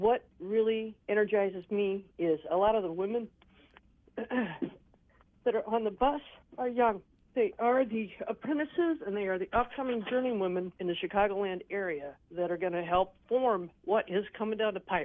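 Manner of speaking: voice catching a little, slightly choked up. Describing the young tradeswomen on the bus to the march, choked up. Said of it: "I'm a little choked up".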